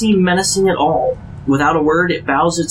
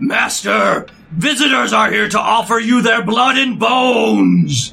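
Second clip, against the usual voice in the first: high-pitched yell with "bones" drawn out; 5 semitones higher than usual. A boy turns quickly and yells to his master, overwhelmingly deep yell. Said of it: "yells in an overwhelmingly deep voice".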